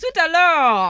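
put-on loud, high, belted exclamation in French accent. Recalling a sketch character in a bathtub: Kenan Thompson's French character. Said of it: "he had this French character".

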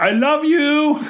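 put-on shrill, very high-pitched, loud shout. Recounting a man passing by at Batu, the speaker re-enacts what he yelled: retelling a yell. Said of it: "And I yelled".

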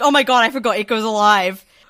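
loud excited gasp of realization. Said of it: "I was like".

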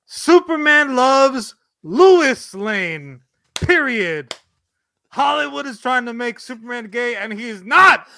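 mock angry voice, loud, slow and angry. Reading out a senator's tweet while shaking a fist: angrily imitating a senator's tweet. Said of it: "I'm gonna shake my fist angrily".

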